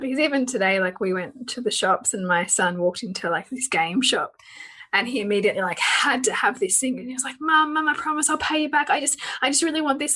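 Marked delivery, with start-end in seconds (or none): 7.4-10.2 desperate, rapid-fire, rushed, high-pitched pleading. A mother retelling her son in a game shop: imitating Hugo's rushed pleading. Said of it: "talking at a hundred miles an hour".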